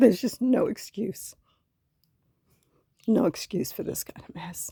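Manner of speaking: choked-up voice, cracking and breaking with upset. Looking at a mess they must keep repairing, voice breaking. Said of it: "my voice is breaking because it's hard for me to look at this".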